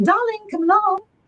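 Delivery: put-on very high, called out in an English accent. Speaker retelling a voice heard at night calling to them, in an english accent. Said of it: "it was in an English accent".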